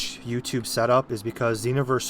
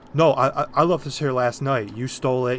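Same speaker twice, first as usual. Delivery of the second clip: plain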